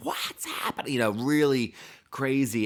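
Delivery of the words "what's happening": whispered, panicked scream. Retelling a movie scene where a character screams: imitating a scream. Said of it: "And then she screams".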